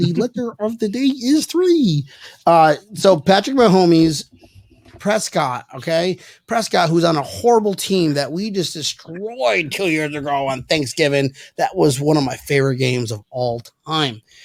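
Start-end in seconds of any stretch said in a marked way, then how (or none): 0.0-2.0 put-on frog puppet voice. Joining in on a joke about a quarterback: Kermit the Frog voice. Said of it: "Kermit the Frog here".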